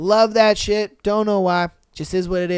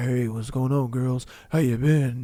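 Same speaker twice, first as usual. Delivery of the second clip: overdone, put-on deep, low voice; 7 semitones lower, 6 dB quieter than usual. Wishing to sound like deep-voiced guys greeting girls, put-on deep voice. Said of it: "I wish I could make my voice deep. I wish I could just be like".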